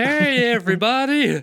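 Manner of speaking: hello pitched way up very high. Quoting a cartoon doctor's greeting: Doctor Nick voice. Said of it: "talking about Doctor Nick".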